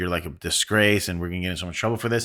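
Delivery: ordinary talk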